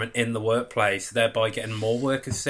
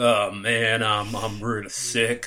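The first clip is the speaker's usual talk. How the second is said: slow, ailing, sickly Southern drawl. Show the sick person you are talking to how they sound, imitating a sick, sexy southerner. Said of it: "you sound kind of like".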